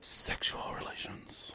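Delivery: soft, hushed, unvoiced whisper.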